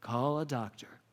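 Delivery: restrained, calm, understated, low-key voice. Retelling a stage moment after a failed door charge: imitating Matthew Broderick saying it very quietly. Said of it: "he just very quietly goes".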